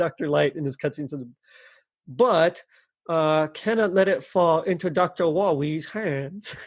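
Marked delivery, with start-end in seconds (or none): 3.5-6.5 put-on heavy New York accent with a lisp. Quoting a video game cutscene line, Doctor Light, New York accent. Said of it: "I don't know if it's supposed to be like a New York accent with a with a lisp".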